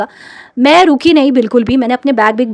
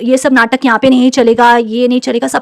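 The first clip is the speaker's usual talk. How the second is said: usual speaking voice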